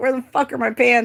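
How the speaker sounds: put-on high-pitched yelling. Retelling waking up and asking someone about missing pants: imitating own yelling.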